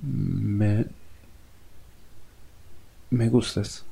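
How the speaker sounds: soft, quavering, trembling, barely getting words out. Asked what is wrong, the other person answers the narrator in a trembling voice. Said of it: "Me dijo con voz temblorosa".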